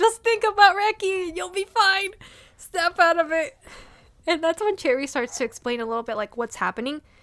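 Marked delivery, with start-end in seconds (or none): 0.0-3.6 high-pitched, urgent screaming. Recounting watching Langa's scene, retelling own screaming at the character. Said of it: "The whole time I kept screaming".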